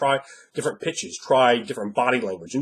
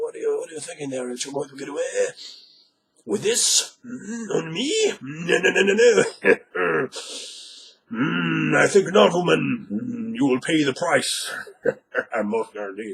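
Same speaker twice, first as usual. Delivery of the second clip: put-on fantasy orc creature voice; 3 semitones higher than usual. Demonstrating how the orc might talk: orc voice. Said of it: "maybe the orc. Uh, it talks like this".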